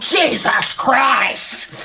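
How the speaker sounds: pointed, emphatic, thrown-back delivery. Retelling saying a man's words back to him: retelling saying it really loud. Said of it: "really loud".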